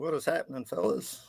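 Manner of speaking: soft, breathy, exhausted, worn-out voice. A guest joining the show greets the hosts in a tired, exhausted voice. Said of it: "you sound like you've been up since four o'clock in the morning".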